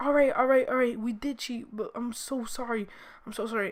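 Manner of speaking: trembling, shaky, nervous, frightened voice. Retelling a classmate confessing to the teacher: imitating a shaking nervous kid. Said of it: "he was shaking".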